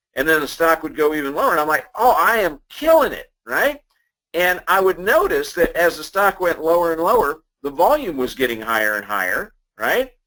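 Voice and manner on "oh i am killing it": high, drawn-out, overjoyed ecstatic delight. Retelling their past self watching a stock drop, acting out ecstatic excitement. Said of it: "I would just be ecstatic".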